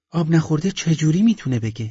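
astonished, high-pitched. In a story, a woman hands over a bowl of water and asks: surprised. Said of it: "با تعجب گفت".

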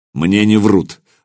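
hard, harsh. A rider replies to a companion who just praised his informant, harshly. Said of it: "жестко произнес Соловей".

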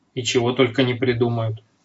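plain

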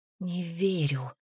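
hushed whisper through numb lips. The narrator answers the old woman's claim about her father: whispered through numb lips. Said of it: "прошептала я помертвевшими губами".

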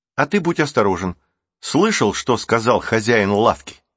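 ordinary talk

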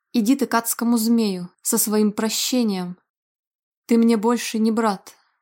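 plain reading voice

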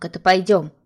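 plain

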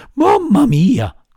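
shrill, high, frightened shout. Narrator reads the puppet's outburst before he turns to the dolphin, frightened shout. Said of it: "gridò spaventato il burattino".

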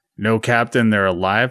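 normal talking voice

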